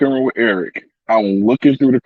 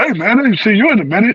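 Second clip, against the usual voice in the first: very high-pitched voice; 10 semitones higher than usual. Doing the impression everybody does of Ron, greeting someone. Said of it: "the Ron Holiday impression".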